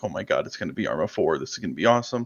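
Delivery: fast, hyped-up, gushing put-on thrilled excitement. Retelling own reaction on hearing of a big update: retelling own hyped-up words. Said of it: "I was so hyped up".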